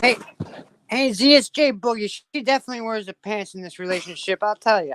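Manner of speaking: loud, attempted, put-on Chicago accent. Playing the boyfriend jay boogie in a skit: attempted chicago accent. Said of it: "Kristen trying to do a Chicago accent".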